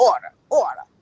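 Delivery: rude yelling over a loudspeaker. Retelling how someone on a loudspeaker spoke to her, retelling a rude yell. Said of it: "very rude, yelling".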